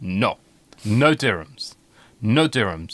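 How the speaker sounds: very grumpy, slow, repeated "no". Retelling how a woman cut the speaker off mid-question, imitating a grumpy reply. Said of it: "very very grumpily said".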